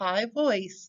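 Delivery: ordinary delivery, nothing marked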